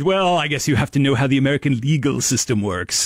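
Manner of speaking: contempt dripping from the word 'legal'. Retelling a scientist's reply about the legal system, imitating scorn on legal. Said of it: "so much scorn in his voice when he said the word legal".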